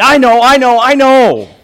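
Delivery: put-on excited shout. Telling of a little girl answering her teacher, retelling an excited shout. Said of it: "She shouted out excitedly".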